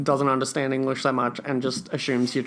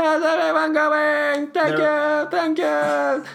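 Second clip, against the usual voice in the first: clumsy comic stand-up delivery, very high, loud, slow; 14 semitones higher, 5 dB louder than usual. Doing a requested impression again: bad Jerry Seinfeld impression. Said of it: "can you try your Jerry Seinfeld impression again".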